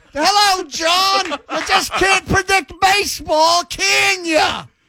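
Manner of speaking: put-on vintage, old-timey 1920s woman's voice. Showing what she sounds like: roaring 20s old-time gal voice. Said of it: "that's where she's from".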